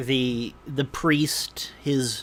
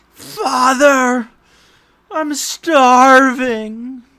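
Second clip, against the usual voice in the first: put-on young man's shrill, loud, drawn-out cry; 12 semitones higher, 13 dB louder than usual. As the group files into the chapel, a voice from below the floor: young man crying out. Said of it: "you hear a young man's voice cry out".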